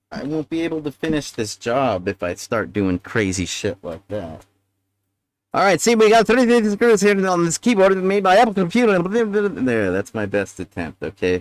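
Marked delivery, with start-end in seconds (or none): 5.9-9.0 breakneck, rapid-fire fast-talking pitchman voice. Pausing during a keyboard repair, he describes the keyboard, Micro Machine Man impression. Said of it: "Micro Machine Man impression".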